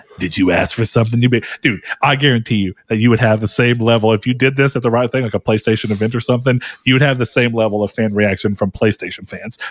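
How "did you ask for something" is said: put-on gravelly character voice. Imagine the audience suddenly hearing a figure they can't quite make out, in [name]'s gravelly voice. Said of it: "[name]'s gravelly voice being like".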